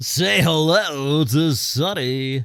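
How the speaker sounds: mock strip club announcer voice. Joking about the creepy sales pitch: imitating a creepy strip club announcer. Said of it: "he sounds like the creepy, uh, strip club announcer".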